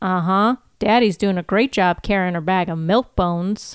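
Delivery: ordinary delivery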